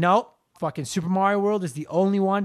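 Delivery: ordinary delivery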